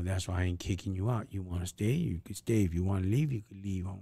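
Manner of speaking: plain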